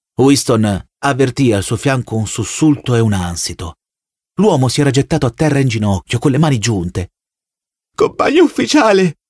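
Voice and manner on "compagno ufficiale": very high, begging, pleading shout. A man on his knees, hands clasped, calls to an officer, shouting. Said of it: "gridò".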